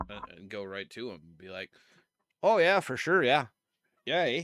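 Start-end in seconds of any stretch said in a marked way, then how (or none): 2.4-4.4 booming, loud, put-on Canadian accent. Describing talking to a shop worker there: put-on canadian accent. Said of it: "I can turn it on with him".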